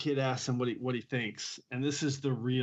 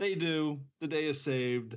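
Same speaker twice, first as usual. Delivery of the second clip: plain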